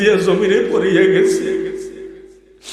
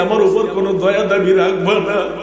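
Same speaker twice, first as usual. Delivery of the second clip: normal talking voice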